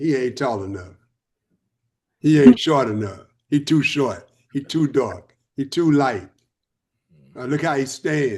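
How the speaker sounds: plain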